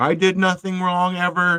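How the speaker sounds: mock self-pitying voice. Mocking how a comic artist comes off: mock self-pitying voice. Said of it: "he comes off like he's just a victim here".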